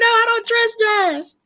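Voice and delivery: mock screaming in a very high voice. Retelling yelling at a contestant on TV, imitating screaming. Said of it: "I was screaming".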